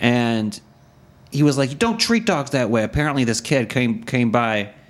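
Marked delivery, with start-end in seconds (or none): 1.7-2.8 mock-yelling, higher pitch, faster pace. Telling how a man at the window yelled at the kids: retelling someone's yelling. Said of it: "And he's yelling".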